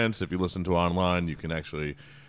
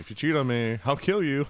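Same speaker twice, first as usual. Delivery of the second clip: mock casual offhand tone, pitched up, serious underneath; 8 semitones higher than usual. Speaker acts out a wife's remark to her partner, mimicking a casual tone. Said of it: "just like casually mention".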